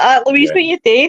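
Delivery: put-on scream. Retelling a scary VR shark moment: retelling own screaming. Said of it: "and I'm screaming".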